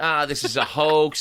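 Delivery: dismissive mock impression voice. Imitating the orange guy down south dismissing the pandemic: imitating the orange guy. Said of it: "the orange guy down south going".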